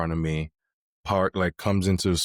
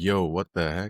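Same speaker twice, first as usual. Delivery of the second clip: imitated, heated, angry outburst. Retelling chasing after a man who insulted him: retelling own heated outburst. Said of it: "I'm heated".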